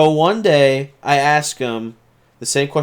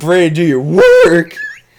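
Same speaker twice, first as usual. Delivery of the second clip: raised voice that cracks partway through; 3 semitones higher, 7 dB louder than usual. Retelling telling a friend to do his work, imitating a voice crack. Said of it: "But my voice cracked".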